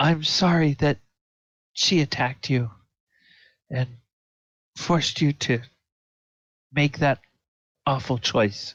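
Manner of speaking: weeping while speaking. Narrator voicing a weeping woman who turns to a player's character: weeping while speaking. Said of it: "you can tell that she's weeping".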